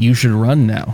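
mock flat deadpan delivery. Acting out warning the yard helper to run: put-on deadpan. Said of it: "straight deadpan faces and be like".

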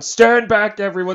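loud, high scream through a megaphone. Retelling comic characters who use megaphones on a crowd: imitating screaming through a megaphone. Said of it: "start screaming at everyone".

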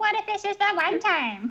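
very high-pitched cartoon voice. You show Jason how to get his voice higher for Tails, in a high-pitched Tails voice. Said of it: "You need to get your voice higher".

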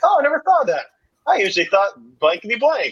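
put-on nonchalant sing-song. Describing how a woman answered a man, the speaker imitates her nonchalant tone.

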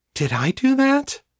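awed, wondering voice, very high pitch. Narrator reading a woman's question as she looks at the crowd, wondering voice. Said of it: "in a wondering voice".

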